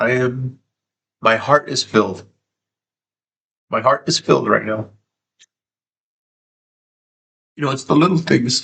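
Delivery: happy crying, tearful joyful voice. Thanking viewers while crying tears of joy: crying with joy. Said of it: "I'm not crying 'cause".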